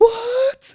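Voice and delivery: very high, loud frantic cry. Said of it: "because I'm like".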